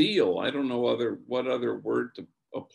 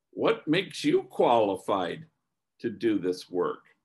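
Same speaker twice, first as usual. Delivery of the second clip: mock, pointed, challenging tone with an edge; 3 semitones lower than usual. Retelling what one woman asked the speaker: imitating an edge in her voice. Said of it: "with a kind of an edge in her voice".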